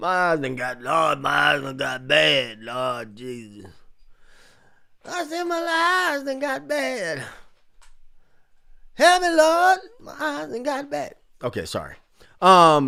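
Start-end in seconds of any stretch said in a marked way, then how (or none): 0.0-11.2 swooping, sing-song, lamenting put-on old man voice. Reading viewer comments aloud, the speaker complains about his eyes: mock old man voice. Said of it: "I sound like an old man".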